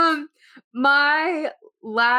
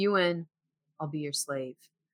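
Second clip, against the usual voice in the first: mock-dramatic, acted-out delivery, quieter; 7 semitones lower, 9 dB quieter than usual. Retelling another person's reply in a basketball bet, delivered very dramatically. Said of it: "Kyle very dramatically says".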